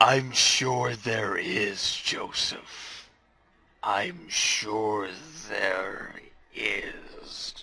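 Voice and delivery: tense, strained tone. Replying to Joseph in a role-played scene: very strained voice. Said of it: "A very strained voice replies".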